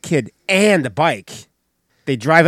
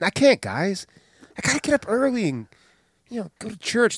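put-on soft, high girlish little voice; 8 semitones higher, 5 dB quieter than usual. Retelling what someone told the guys, in a girly voice. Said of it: "I know I said it like a girl's voice".

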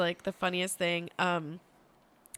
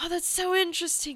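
high, creepy, funny put-on scruffy-man voice. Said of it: "who speaks in a funny voice".

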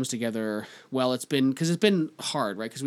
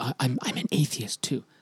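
whispering. Recalling what a woman said after seeing his t-shirt; retelling a whisper. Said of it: "why are you whispering that?".

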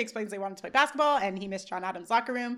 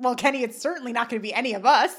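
usual speaking voice

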